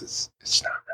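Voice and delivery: hushed, confidential whisper under the breath. Speaker quotes a man's reply to a question about beer, retelling a whisper. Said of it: "why are we whispering?".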